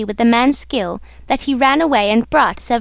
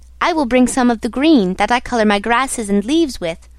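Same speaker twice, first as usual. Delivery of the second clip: plain reading voice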